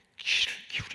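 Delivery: soft unvoiced whisper, said aside.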